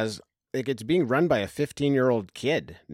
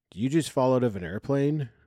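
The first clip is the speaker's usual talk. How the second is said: flat, affectless deadpan with no emotion; 2 semitones higher than usual. Retelling a character's line from a film scene: imitating a flat, emotionless delivery. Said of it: "no affect, no emotion".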